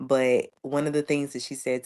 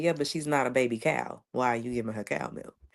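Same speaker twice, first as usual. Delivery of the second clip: put-on matter-of-fact way of speaking. Retelling what the listener's mom told a grandmother: imitating someone speaking matter-of-factly. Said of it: "just the way that she said it so matter-of-factly".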